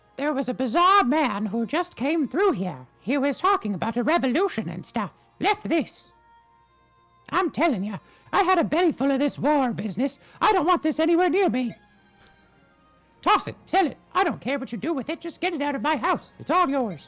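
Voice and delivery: very high, sing-song, swooping cartoon voice. Voicing a villager who hands over a weapon: Mickey Mouse-like voice. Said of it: "I didn't know Mickey Mouse was in that house".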